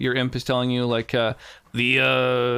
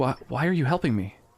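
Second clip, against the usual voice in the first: hushed whisper. Voicing a character who jumps up and grabs her stuff: whispering.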